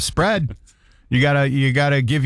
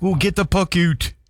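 out pronounced the Canadian way; 4 semitones higher than usual. Describing a hockey announcer's pronunciation, quoting them in a Canadian accent. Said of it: "like Canadian".

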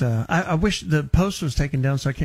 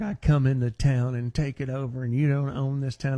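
ordinary talk, nothing marked

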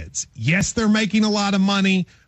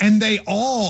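plain

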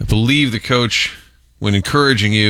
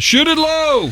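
shouted call, pitched very high. Retelling what they yell at lacrosse games: imitating own yell. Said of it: "I like to just yell".

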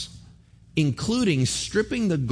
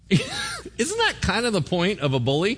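ordinary delivery

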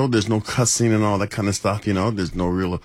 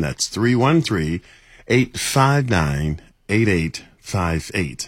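slow, deliberate, each digit spaced and drawn out. Giving a phone number after being asked for it real slow: saying it real slow. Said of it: "real slow".

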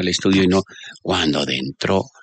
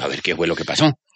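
ordinary delivery

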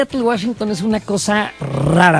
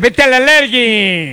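very slow announcer voice, every word drawn out; 3 semitones higher than usual. Repeating a phrase the others liked as he'd say it, doing a Perro Bermúdez impression. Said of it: "Si lo dijera el perro Bermúdez".

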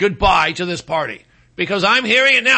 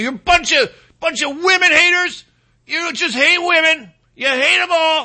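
mock screaming, much higher pitched; 8 semitones higher than usual. Retelling a man flipping out at MAGA supporters, imitating someone screaming. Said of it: "screaming at MAGA".

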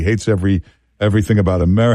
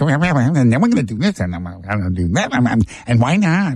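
annoying, irksome speechifying voice. Imitating how an annoying politician talks: imitating an annoying guy. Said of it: "he talks like".

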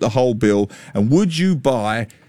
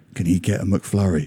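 put-on whisper, lower; 4 semitones lower, 3 dB quieter than usual. Retelling how a daughter asked a wife for a mcflurry: imitating someone whispering. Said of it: "My daughter whispers to my wife".

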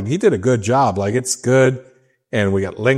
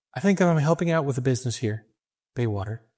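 put-on bright, attentive young woman's voice, quieter; 3 semitones higher, 6 dB quieter than usual. Retelling what a bright young lady came and told you, in a put-on Julie voice. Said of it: "Is this your Julie voice you're doing".

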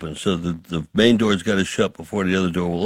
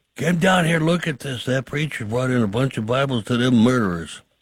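acted, pitched-up voice calling out down a hall; 5 semitones higher than usual. Retelling how a guard reacted to Bibles being brought in: imitating a guard yelling. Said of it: "I heard him yell down the hallway".

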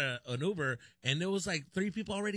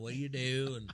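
put-on cowboy accent, lower pitch; 3 semitones lower than usual. Retelling a stranger's questions during a carpool ride: cowboy accent. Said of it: "this guy with a cowboy accent".

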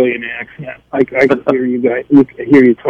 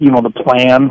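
normal talking voice

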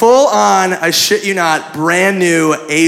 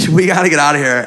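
ordinary delivery

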